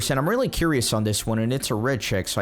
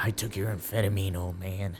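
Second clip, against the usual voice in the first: hushed whisper, lower and quieter; 3 semitones lower, 7 dB quieter than usual. Choosing a line to say to a sleeping man: whispering. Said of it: "I'm gonna whisper".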